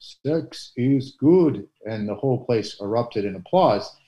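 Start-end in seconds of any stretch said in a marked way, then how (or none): 0.0-1.7 put-on Polish accent, pitched up. Retelling a homily at an outdoor ballpark mass: John Paul II Polish accent. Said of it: "he kinda said in his Polish accent".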